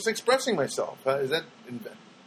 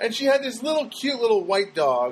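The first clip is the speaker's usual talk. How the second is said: ordinary talk, nothing marked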